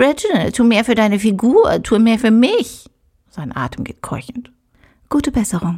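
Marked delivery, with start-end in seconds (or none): 0.0-2.9 mocking, scornful, parroting mimicry. Pouring another cognac, he mimics Nina's words to him, mocking imitation of Nina's voice. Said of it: "Er äfft Ninas Stimme nach".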